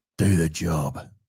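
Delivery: very deep, dropped-down delivery. Do an impression you did not know you were doing, in a Jason Statham voice. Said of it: "In the Statham voice".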